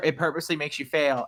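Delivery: ordinary talk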